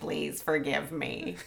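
rough, croaky, low, hushed, creaky dying woman's voice. Recapping a story scene, imitating the woman apologizing with her head against the wall. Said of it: "That's a good impression".

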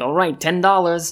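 odd, weird, put-on New Jersey accent. Describing an Arthur episode, voicing the crossing guard in a weird Jersey accent. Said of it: "Sorry to use a weird Jersey accent".

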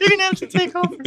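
uncontrollable laughter. Speaker asks the other person to take over, laughing uncontrollably. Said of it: "I can't stop laughing".

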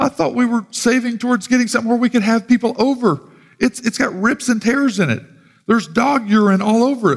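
mock sobbing through tears, high, tearful crying voice. Retelling a woman's reaction to something her husband brought in: imitating someone crying. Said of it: "She's crying, going".

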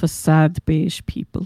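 slow, monotone documentary narrator voice.

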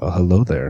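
silky velvet-smooth voice, projected. Greeting the others after being introduced: velvety voice. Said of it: "That voice is like velvet".

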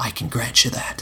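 plain

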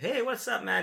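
very high, friendly put-on Italian accent. Retelling a greeting from a band member: imitating an italian accent. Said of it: "he's got this Italian accent".

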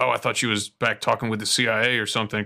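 plain

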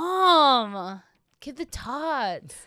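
loud, high, stretched-out voice. Quoting a film character demanding tots: Napoleon Dynamite impression. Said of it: "Napoleon Dynamite, when he's like".

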